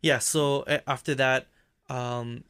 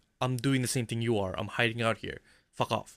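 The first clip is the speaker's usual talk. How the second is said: normal talking voice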